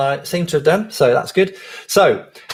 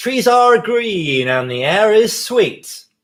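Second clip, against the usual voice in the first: full genuine American accent, slow and deliberate; 4 semitones higher than usual. Leading others through a spoken bit, saying it in a real american accent. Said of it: "This definitely needs to be in a real American accent".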